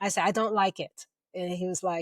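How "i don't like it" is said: normal talking voice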